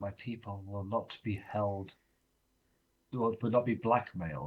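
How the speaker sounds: hushed, leaned-in half-whisper. In a roleplaying scene, a lord leans in to someone's ear, half-whispering. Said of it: "lean in to whisper in his ear".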